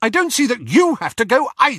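curt, sharp, very high snapping tone. An older woman, dropping all pretence, snaps at the young speaker. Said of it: "She snapped".

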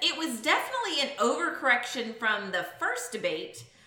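ordinary talk, nothing marked

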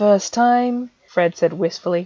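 ordinary delivery

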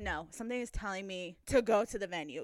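ordinary talk

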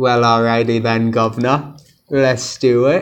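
bad, awful put-on British accent. Doing a put-on English accent while reading a question: awful put-on British accent. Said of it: "a real awful accent you got there".

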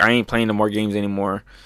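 normal talking voice

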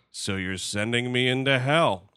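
put-on board-stiff, uncommitted, wooden delivery. Mocking a line from the trailer, flat Hugh Jackman line reading. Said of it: "as fucking flat as a board".

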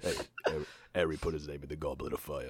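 deep, nasal film star voice. Joining in with a Sylvester Stallone impression in the Harry Potter world. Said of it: "you guys have to do Sylvester Stallone impressions".

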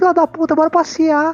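put-on thin little voice. Retelling how a big brute of a guy talks to his dog, thin little voice. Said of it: "chega com a voz fininha".

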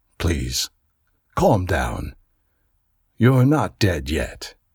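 quiet, soft-spoken, low voice. The usher answers the narrator, who has just asked if he is dead, softly. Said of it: "My usher answered softly".

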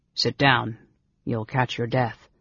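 plain reading voice

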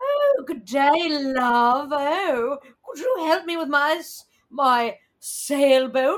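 put-on, bad British accent. Acting out someone from the story, in a bad british accent. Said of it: "it was probably a bad accent too".

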